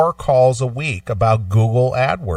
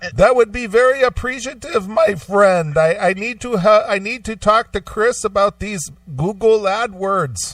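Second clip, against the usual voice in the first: put-on heavy, laid-on Indian accent; 8 semitones higher than usual. Acting out a man who wants to reach the speaker's friend, thick Indian accent. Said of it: "thick, thick Indian accent".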